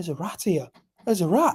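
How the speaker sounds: hushed, under the breath. Retelling answering a bartender who asked what was wrong; retelling a hushed warning. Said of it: "trying not to say it loud".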